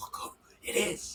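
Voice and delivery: quiet whispered voice. Retelling spotting a runner from a documentary: imitating own past whisper. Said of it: "whispering to my wife".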